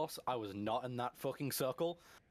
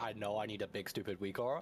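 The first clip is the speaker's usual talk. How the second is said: usual speaking voice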